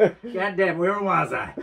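fake American accent, very high, drawn out. Joking with the other speaker about where he has been: put-on American accent. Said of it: "suddenly he's talking in an American accent".

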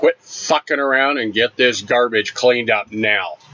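mock stern, mild yelled delivery. Telling a story, re-enacting how he yelled at a guy, retelling a big yell. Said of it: "in my biggest voice, I yelled at him".

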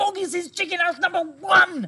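very high, loud spluttering out of words. The small fox answers his mother's question, spluttering. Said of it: "spluttered the small fox".

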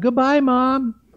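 put-on, high-pitched shouting, calling out. Telling a joke where the young man calls out to a departing shopper: shouting goodbye across a store. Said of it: "he shouted out".

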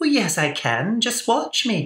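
put-on very high, sing-song, swooping Scottish accent. Retelling how your mom answered people who said she couldn't do something, imitate her Scottish accent. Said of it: "she would say with her Scottish accent".

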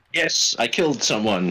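loud, slow, very happy, gleeful delivery. Answering the other players during a game, sounding very happy. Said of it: "You sound very happy about that".

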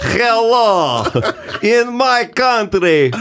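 very high-pitched, very slow drawl, stretched-out hello. Asked by another speaker for an impression: Yakov Smirnoff voice. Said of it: "can you do Yakov Smirnoff?".

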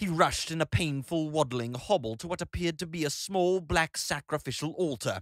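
ordinary delivery, nothing marked

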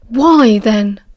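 said with a growl. Remus, at the cell bars, asks Castor a question, growling. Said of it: "Remus growled".

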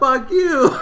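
high, loud yell with laughter.

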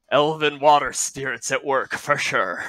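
muttering, mumbled under the breath. Playing a character at the table, muttering under the breath. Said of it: "I'm going to mutter under my breath".

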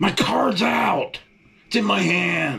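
very high, rough, drawn-out scream. Speaker recounting a gas pump that kept rejecting their card, retelling screaming at it. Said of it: "I'm screaming at the gas pump".

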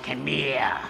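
rough, smoky, raspy smoker's voice. Retelling a woman in a wheelchair calling out, in a raspy smoker's voice. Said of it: "the raspy smoker's voice".

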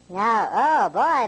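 very high, gas-lifted, high-pitched voice. Playing around with gases in a demonstration, very high-pitched voice. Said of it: "my voice is really high this time".

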